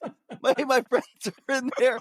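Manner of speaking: high, desperate pleading. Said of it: "he's looking through the little window at the door like".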